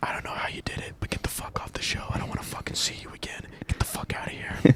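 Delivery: hushed, menacing whisper under the breath. Imagining what someone on a show might whisper to a contestant, whispered. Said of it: "what if they're whispering like".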